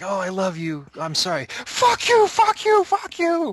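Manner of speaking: shrill, very high, drawn-out yell. Describing a movie scene, the speaker acts out a man yelling at passing cars. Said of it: "pauses ... to yell at the car".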